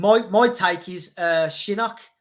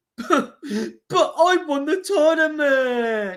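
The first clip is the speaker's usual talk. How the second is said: mock high, whimpering, crying complaint; 8 semitones higher than usual. Imagining a defeated Shao Kahn sent back; mock whimpering as Shao Kahn. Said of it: "He'd go back whimpering, crying, going".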